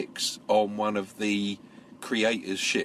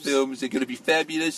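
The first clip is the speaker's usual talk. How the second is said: put-on boastful, big-talk showman bragging voice; 4 semitones higher than usual. Retelling how Ridley talks about his films now, Donald Trump impression. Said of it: "That's how he talks now. He talks like Donald Trump".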